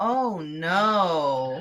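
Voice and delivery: wooden, flat monotone, last word drawn out. Describing a film character's awful line delivery, imitating flat line delivery. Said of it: "the line delivery is so awful there because he just goes".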